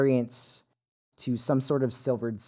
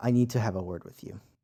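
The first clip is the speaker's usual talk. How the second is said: low whisper, lower, quieter, faster; 4 semitones lower than usual. Amid a crowd going up the stairs, someone speaks to you: low whisper. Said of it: "in about as low of a whisper that they can manage".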